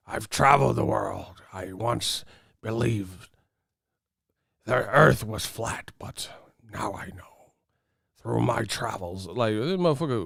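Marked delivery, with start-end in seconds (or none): 0.1-9.2 slow, gravelly pirate drawl. Mocking a man who talks like a pirate, in a gravelly pirate voice. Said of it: "why your voice sound like grovelly".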